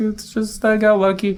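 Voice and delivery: high humble falsetto.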